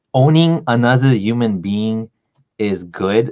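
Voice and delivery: ordinary talk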